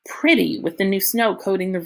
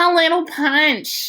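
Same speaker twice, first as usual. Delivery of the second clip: put-on high-pitched slurred drunk voice; 10 semitones higher, 4 dB louder than usual. Reading a story aloud, voicing Loretta who has been drinking: slurred drunk voice. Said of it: "her voice is all slurpy".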